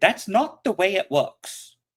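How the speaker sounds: put-on very high, argumentative five-year-old kid voice. Quoting what their five-year-old says when arguing, in a five-year-old's voice. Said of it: "you gotta warn me if you're gonna do a voice".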